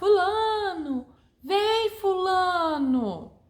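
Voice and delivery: high, slow, drawn-out calling shout.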